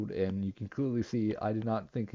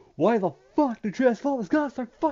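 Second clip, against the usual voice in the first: very high, shrill, loud yell, cut short; 14 semitones higher, 8 dB louder than usual. Ranting about transformers being so expensive: yelling. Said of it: "I'm sorry for that yell".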